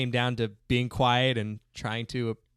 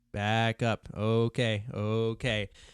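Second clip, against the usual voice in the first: put-on calm, gentle, soft-spoken voice. Recalling an instructor talking to elephants, imitating a calm, gentle voice. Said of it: "talk to the elephants like in a calm, gentle voice".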